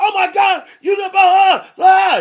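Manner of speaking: shrill, very high, very slow, stretched-out yell. Acting out a car owner upset over a bird, imitating someone yelling. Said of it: "They yelling".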